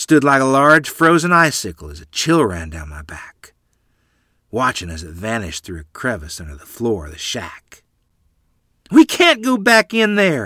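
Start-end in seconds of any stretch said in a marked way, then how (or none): 8.9-10.5 sudden, high-pitched, loud shriek. A mother shrieks after a thing vanishes under the shack's floor. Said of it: "Mother shrieked".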